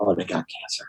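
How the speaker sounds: put-on hushed voice. Describing how people there talk about illness, imitating a hushed voice. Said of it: "kind of lower their voices".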